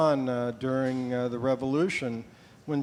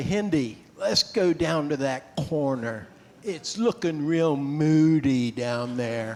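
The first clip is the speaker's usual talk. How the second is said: put-on Cockney accent. Recalling what he would say when you were in a dangerous situation, in a cockney accent. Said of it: "had a Cockney accent".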